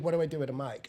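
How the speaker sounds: normal talking voice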